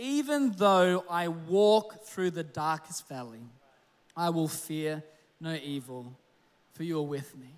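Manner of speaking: very slow, low, deliberate, "walk" drawn out. Reading a Bible verse aloud to listeners, each word at a time; very slow. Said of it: "I want to read this very slow".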